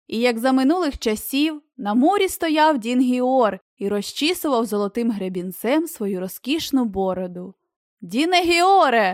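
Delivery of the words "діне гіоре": high, loud shout from a distance. A man calls to someone who does not respond, shouting. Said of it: "закричав Лестер".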